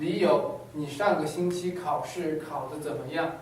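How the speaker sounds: plain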